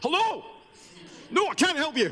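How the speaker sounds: put-on Scottish accent, loud, very high yell. Showing off the scottish accent he picked, joking about its shouting: shouting scottish accent. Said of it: "Scots people don't just shout".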